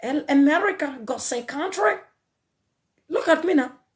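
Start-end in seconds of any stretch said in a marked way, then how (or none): 0.0-1.9 fake American accent, high and slow. Mocking someone from the village who tries to act american: fake american accent. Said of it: "slap the fake accent out of me".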